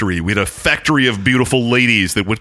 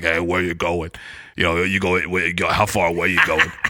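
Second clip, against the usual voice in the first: put-on gruff trucker-style voice; 7 semitones lower, 5 dB quieter than usual. Telling a story about a trucker who picked him up, impression of a trucker. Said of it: "I was going to do my impression of him".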